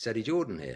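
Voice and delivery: put-on Irish accent. Retelling a phone call, voicing the caller introducing himself in an Eddie Jordan Irish accent. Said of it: "this Irish voice says".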